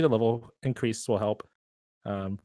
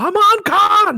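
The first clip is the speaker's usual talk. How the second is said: very high-pitched, very loud shouting shriek; 12 dB louder than usual. Showing how the English dub says the name: Camille's dub voice. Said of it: "the way Camille says".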